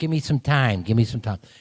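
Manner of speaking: put-on hardcore Chicago accent. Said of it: "Michael's got a very hardcore Chicago accent".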